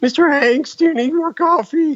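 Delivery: put-on very high, squeaky teenager voice. Suggesting his own small part in a movie, squeaky teen voice. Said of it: "I said the squeaky voice teen".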